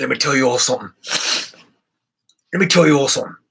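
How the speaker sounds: put-on British accent on every word. Speaker addresses the audience, showing off a british accent. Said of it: "This is my British accent".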